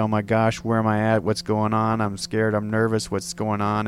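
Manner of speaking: normal talking voice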